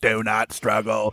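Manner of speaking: low, soft, machine-like robot voice. Describing a voice in someone's head, the speaker mimics its earlier robotic voice. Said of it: "before it was like this robotic".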